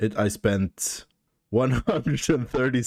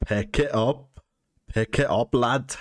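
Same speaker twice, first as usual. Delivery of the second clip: put-on Scottish brogue, fully committed throughout; 3 semitones higher than usual. Showing off the one accent they can really do, Scottish accent. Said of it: "Scottish is the only English accent I can I can try and really do".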